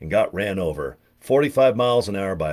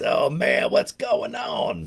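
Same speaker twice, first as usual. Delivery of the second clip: slow, rough, dragged-out DJ voice; 4 semitones higher than usual. Recalling a radio DJ heard growing up: Wolfman Jack voice. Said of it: "he talked like this".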